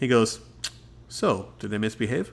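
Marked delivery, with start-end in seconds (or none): 1.1-2.3 mimicked very calm tone, quieter. Retelling a scene, the speaker quotes his question to the returning parents, mimicking a very calm tone. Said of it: "with the most calmest look".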